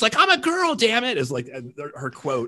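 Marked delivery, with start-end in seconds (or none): 0.2-1.2 shrieking, very high-pitched angry outburst. Retelling a movie scene where a character yells in an elevator: imitating Shannen Doherty yelling. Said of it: "She's yelling at Jason Lee".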